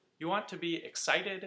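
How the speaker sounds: expressive, energetic intonation. Advice on speaking to recruiters, contrasted with monotone: lively, varied inflection. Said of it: "This is an example of speaking with good inflection".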